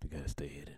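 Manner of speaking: eerie, spooky, creepy put-on voice. Answering a question about a hidden talent: creepy voice. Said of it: "He said that creepy voice".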